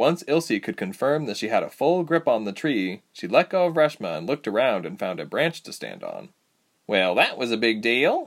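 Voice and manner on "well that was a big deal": playful, teasing. A narrator reads one character teasing another, teasing. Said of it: "Reshma teased".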